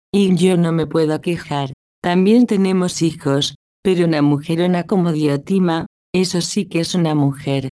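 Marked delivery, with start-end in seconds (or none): none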